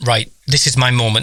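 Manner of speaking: ordinary talk, nothing marked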